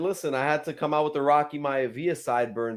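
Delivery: normal talking voice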